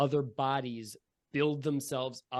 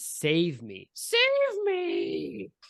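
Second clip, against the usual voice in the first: grating, rusty, raspy screaming; 4 semitones higher, 3 dB louder than usual. Game master voices a slumped-over halfling in a glass case, rusty scream. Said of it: "screaming rustily".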